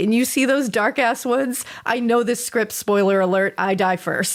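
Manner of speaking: ordinary talk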